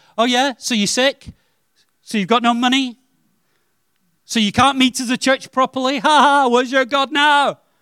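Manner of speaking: mock, high-pitched, derisive, intimidating, jeering taunting. Voicing Satan taunting a struggling believer: imitating Satan intimidating. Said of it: "Satan wants to imitate you and say".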